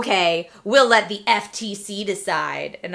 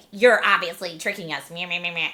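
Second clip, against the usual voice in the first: mock angry, taunting voice with meh-meh sounds; 3 dB quieter than usual. Mocking a commenter who called the post paid, mocking angry internet voice. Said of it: "That's my angry internet voice person".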